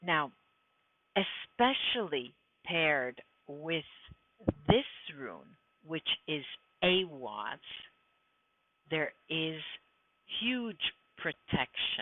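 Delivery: slow, emphatic, word by word, Awaz drawn out. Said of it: "speaking slowly and trying to stress, um, my words".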